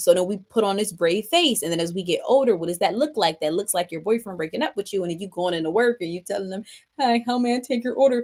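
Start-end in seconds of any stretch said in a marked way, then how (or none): 7.0-8.2 put-on bright, forced cheerful customer-service voice. Acting out greeting customers at work after a breakup: imitating a forced smiling greeting. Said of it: "you got a smile on your face, even though you wanna cry".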